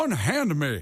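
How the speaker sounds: exaggerated Southern accent. Showing the others the voice again: Foghorn Leghorn Southern accent. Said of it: "I'm doing a Foghorn Leghorn, like, a Southern accent".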